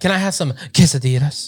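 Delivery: try-hard fake Spanish accent on English. Mocking people who only kind of know spanish: imitating a put-on spanish accent. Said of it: "Stop trying to have an accent".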